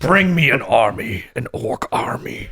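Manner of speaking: deep, big, full-bodied, heavy voice. Asked to feed a line in the voice, the speaker tries a deep full voice. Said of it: "It's so deep".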